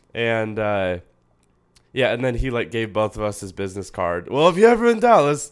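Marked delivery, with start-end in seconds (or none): 4.2-5.5 high, loud bad Boston accent. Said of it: "Boston guy".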